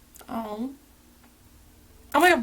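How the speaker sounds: high, tearful voice crying through the words. Reading a sweet letter on camera, crying. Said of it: "why am I crying?".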